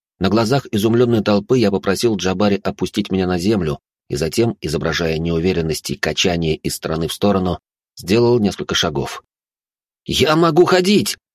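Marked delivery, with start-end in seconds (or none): 10.1-11.2 shrill, very high yelling shout. Before an amazed crowd, the narrator takes a few steps: shouted. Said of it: "закричал я".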